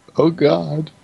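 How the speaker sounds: high, whiny little whimper. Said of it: "what are you whimpering about?".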